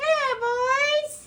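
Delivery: very high, chirpy, drawn-out birdlike voice. Showing the other speaker how to say it, in a bird voice. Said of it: "you have to say it in a bird voice".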